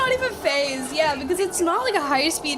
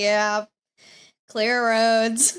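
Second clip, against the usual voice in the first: mock weary, exasperated, fed-up cop voice; 5 semitones lower than usual. Mocking a caller's report of clear roads: imitating an exasperated officer. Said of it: "He sounds exasperated. He's just like".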